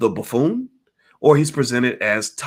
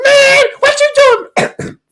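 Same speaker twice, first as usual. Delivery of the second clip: very high-pitched, loud, slow, stretched-out put-on voice; 10 dB louder than usual. Retelling a Rush Hour scene, high-pitched Chris Tucker voice. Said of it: "I can't do that high pitched voice very well".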